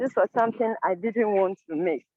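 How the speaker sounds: ordinary delivery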